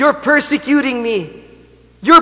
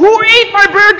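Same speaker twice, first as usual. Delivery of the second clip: put-on old man's high-pitched scream; 7 semitones higher, 4 dB louder than usual. Retelling how an old man screamed at work: imitating an old man screaming. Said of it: "I could hear somebody screaming".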